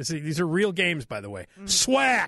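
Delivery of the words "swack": punchy, forceful one-word exclamation of swack. Naming a game whose title has an exclamation point: exclaimed 'Swack!'. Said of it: "And it's an exclamation point. That's why I'm saying it like that".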